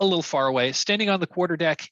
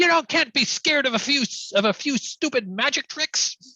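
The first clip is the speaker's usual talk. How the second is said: yelling ship captain voice, higher; 10 semitones higher than usual. Voicing a pirate captain shouting at her fleeing sailors: shouting pirate captain. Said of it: "she's shouting at them".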